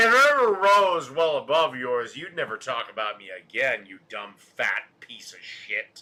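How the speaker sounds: bitchy, catty, sassy delivery. Insulting the other speaker at the end of a remark: catty, sassy tone. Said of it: "he's being very catty".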